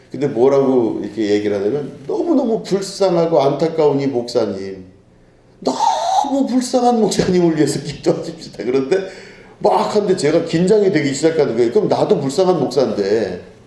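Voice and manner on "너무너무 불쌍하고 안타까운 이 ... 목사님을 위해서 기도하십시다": crying, tearful, pitying voice with swooping pitch. Retelling how a young man led a prayer: imitating a tearful prayer. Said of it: "막 기도를 하고 막 울면서".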